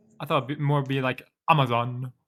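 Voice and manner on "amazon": British accent and pronunciation. Showing how British people would say the word instead: British pronunciation. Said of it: "I don't recall British people speaking like that".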